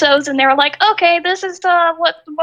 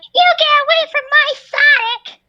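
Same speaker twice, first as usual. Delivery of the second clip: little animated cartoon girl voice, pitched way up; 11 semitones higher than usual. Imagining Amy and Sally fighting over Sonic, doing Amy from Sonic voice. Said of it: "that wee part in that voice does sound like Amy".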